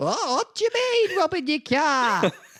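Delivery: mock elderly woman voice. Accused of robbing a car in an improvised scene, answering in Rita from Coronation Street voice. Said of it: "Why are you an old woman?".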